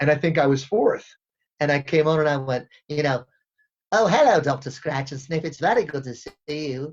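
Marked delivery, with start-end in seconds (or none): 4.0-6.9 voice sounding like after sucking helium. Retelling an audition for the character Wakko: Wakko voice, John on helium. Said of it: "And he listened to people do Wacko".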